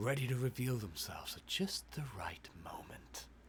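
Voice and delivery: very hushed, low, menacing, sinister character voice. Voicing their character's lines, in a sinister character voice. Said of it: "I'm making him sound more cynical and sinister".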